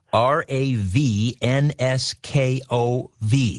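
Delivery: slow spelling, one letter at a time.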